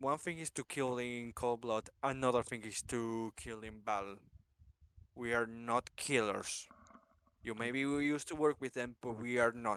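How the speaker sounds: hushed, angry half-whisper. Voicing a character who half-whispers a rebuke to a companion: half-whispering in character. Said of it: "and he whispers to her".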